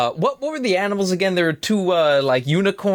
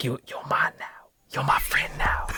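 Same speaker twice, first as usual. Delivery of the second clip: hushed, soft, breathy whisper; 4 semitones lower, 7 dB quieter than usual. Playing a character befriending an animal on his shoulder, whispering in its ear. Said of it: "I just like whisper in his ear".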